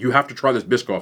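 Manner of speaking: usual speaking voice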